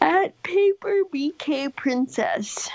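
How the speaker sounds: talking through a yawn. Giving a social media handle to another speaker, yawning while talking. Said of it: "Becky's yawning".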